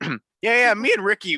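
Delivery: voice breaking partway through. Starting a story about Ricky, voice cracking. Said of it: "My voice cracked".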